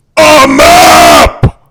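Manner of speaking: very loud, booming, threatening, intimidating roar. Playing a game, intimidating a character an inch from his face, booming intimidating shout. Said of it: "make my voice boom and be like an inch from his face".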